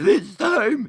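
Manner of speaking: high, slow villain voice spoken breathing in. Praising another player's villain voice, the speaker repeats the line, speaking on an in-breath. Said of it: "it's like they're breathing in".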